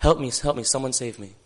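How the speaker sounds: normal talking voice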